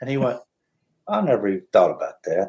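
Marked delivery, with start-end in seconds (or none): 1.1-2.5 dry, dead-straight deadpan delivery. Retelling a guest's reply to a co-host's question: imitating a deadpan reply. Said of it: "he was so deadpan on everything".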